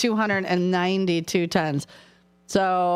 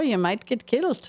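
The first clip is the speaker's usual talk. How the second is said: put-on Scottish accent. Redoing the joke's punchline after being asked for a Scottish accent: Scottish accent. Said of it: "If you had done a Scottish accent".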